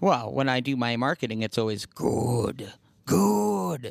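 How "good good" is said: very slow creaky rasp, each "good" stretched. Answering a question about quotes applied to business, in an Emperor impression. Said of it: "That's the Emperor".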